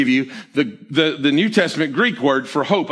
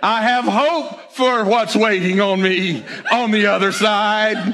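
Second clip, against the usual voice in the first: high, sermon-style preaching cadence; 5 semitones higher than usual. Speaker riffing aloud, then remarking on it, in a preacher cadence. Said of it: "Sound like a preacher, don't I?".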